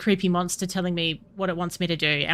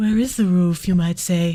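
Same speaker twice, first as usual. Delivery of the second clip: breathy, flat voice with no inflection; 3 dB louder than usual. Voicing a character alone under the moon, breathy voice with no inflection. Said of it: "my breathy voice that has no inflection".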